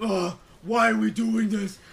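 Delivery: put-on deep voice, mocking. Mocking the other speaker while retelling how they reacted, mock deep-voice impression. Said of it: "how deep your voice gets".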